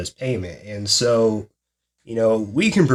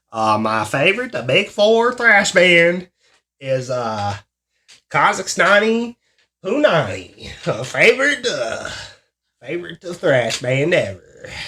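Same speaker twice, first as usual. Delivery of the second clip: high, pitched-up, put-on, weird Kazakh accent; 7 semitones higher than usual. Answering a question about favorite thrash band: Borat accent. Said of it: "your weird-ass accent".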